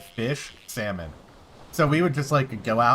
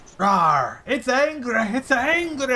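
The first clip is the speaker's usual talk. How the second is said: stretched-out, very high nature-host voice; 13 semitones higher, 4 dB louder than usual. Doing a comedian's impression of another person, reacting to a stingray: Gabriel Iglesias doing Steve Irwin. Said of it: "I'm doing an impression of Gabriel Iglesias doing an impression of Steve Irwin".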